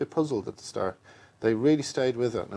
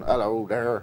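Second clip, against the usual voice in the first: put-on country British accent. Recalling pitching an idea to him, doing a West Country accent. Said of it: "kind of West Country accent".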